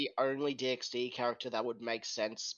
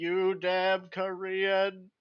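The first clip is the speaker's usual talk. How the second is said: raised, pitched-up synthetic text-to-speech voice; 7 semitones higher, 6 dB louder than usual. Recalling a game's voice to others: imitating WoW text-to-speech. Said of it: "the WoW text-to-speech going".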